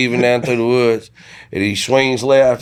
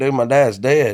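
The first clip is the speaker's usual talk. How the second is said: frantic, alarmed, panicked exclamation. Retelling the moment of thinking dad had crashed: retelling own panic. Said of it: "I'm really panicking 'cause I was like".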